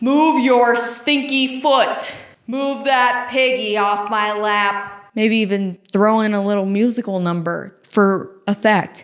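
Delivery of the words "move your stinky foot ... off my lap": slow, projected, menacing put-on scary voice. Showing how she'll tell someone to get their foot off her, in a scary voice. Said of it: "that's my scary voice".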